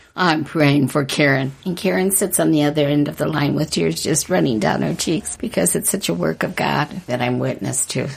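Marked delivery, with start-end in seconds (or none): 0.2-1.5 put-on, rough, gravelly voice. Retelling how she prays for Karen over the phone, gravelly voice. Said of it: "with that gravelly voice".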